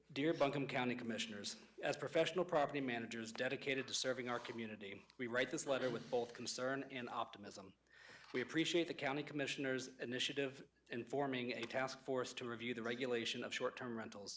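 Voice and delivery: reading aloud quickly at a brisk pace. Reading an open letter aloud within a three-minute limit: reading fast. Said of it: "I'll read fast for the three minutes".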